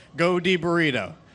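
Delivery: ordinary delivery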